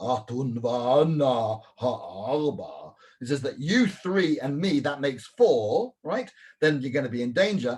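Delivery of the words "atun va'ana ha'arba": eerie ghostly voice, va'ana stretched. Explaining what the mazikin say, in a spooky voice. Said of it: "a spooky voice that says".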